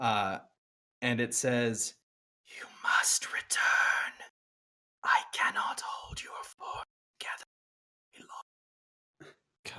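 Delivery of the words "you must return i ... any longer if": hushed whisper, much higher. Narrating a game, voicing a glowing figure that speaks to the player: whispering. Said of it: "I'm trying to do whispers".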